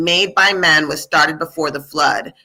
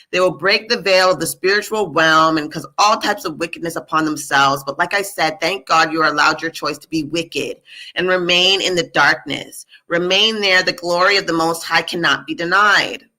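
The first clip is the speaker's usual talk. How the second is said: normal talking voice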